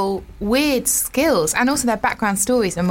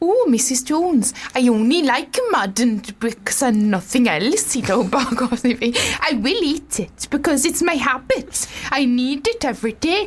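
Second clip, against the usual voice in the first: speaking in a put-on Welsh accent; 2 semitones higher than usual. Reading out a man's quote given to a TV outlet, in a Welsh accent. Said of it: "It was good Welsh".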